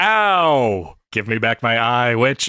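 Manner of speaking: loud monster voice with "ow" stretched out. Voicing a creature as its cybernetic eye is pulled out, creature voice. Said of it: "and it goes".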